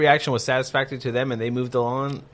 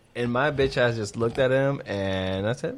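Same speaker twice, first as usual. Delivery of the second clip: ordinary talk, nothing marked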